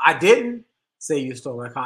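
emphatic stress on didn't, rest even. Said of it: "each time I put the inflection on a different word".

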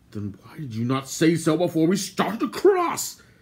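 angry, reproachful tone. After a companion admits he cannot swim, he asks angrily. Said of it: "Gwydion asked angrily".

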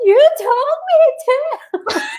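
acted-out, very high, sobbing little-kid voice. A mother recounts her six-year-old daughter's reply after being scolded; imitating a child crying. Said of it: "she freaks out and starts crying and goes".

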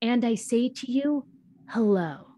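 put-on solemn voice. Mimicking how a teacher would close each class, then dropping the act to joke about it. Imitating a very serious, grave tone. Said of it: "say with this very serious, grave tone".

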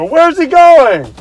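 shrill, very high, very loud shout. Retelling what he yelled at a police officer while stuck in line, retelling a yell. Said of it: "I yelled at the police officer".

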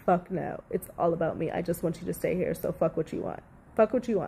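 usual speaking voice

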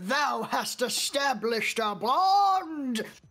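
big booming voice. Imagining a voice from out of nowhere, booming voice. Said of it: "Just some booming voice saying that".

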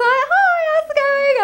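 put-on very high, lingering, drawn-out flirtatious tone. Retelling greeting a date: imitating own flirty greeting. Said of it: "I was kind of flirting around".

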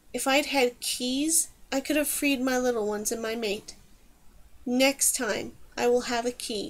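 plain reading voice

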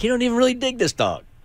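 high, fast, mocking voice, rattled off.

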